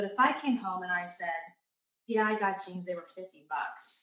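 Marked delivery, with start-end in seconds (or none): 2.1-4.0 dull, flat, let-down and unhappy tone. Showing how tone changes meaning when reporting a jeans purchase: flat, unhappy tone. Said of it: "my tone in my voice and everything led you to believe that I was unhappy".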